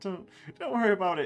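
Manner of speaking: breezy, laughing tone. A character reassures someone who just apologized, laughing it off. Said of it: "She laughs it off".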